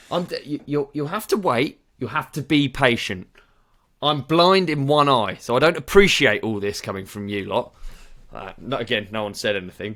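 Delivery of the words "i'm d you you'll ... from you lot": mock angry, agitated outburst, pitched higher. Retelling how a customer at the till started kicking off: imitating an angry customer kicking off. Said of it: "So he started kicking off".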